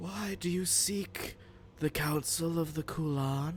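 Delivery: very soft, hushed, whispered voice. Game master voicing a figure that turns to the player, in a very whispery voice. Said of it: "in a very like whispery voice".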